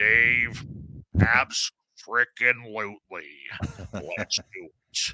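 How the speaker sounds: imitated deep, pleasant voice. Retelling a phone call, imitating Jimmy Church's deep, nice voice. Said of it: "Jimmy in his deep, nice voice".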